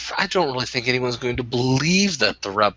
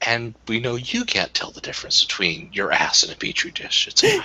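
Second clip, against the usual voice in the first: close, private stage whisper; 3 semitones lower than usual. Playing a character who whispers in another character's ear: whispering in character. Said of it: "I whisper in his ear".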